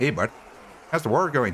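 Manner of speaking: partial, attempted Canadian accent. A streamer tries again to bring back a character voice for chat, in an attempted Canadian accent. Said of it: "we do not me- mention our Canadian accent".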